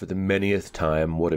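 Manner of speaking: ordinary delivery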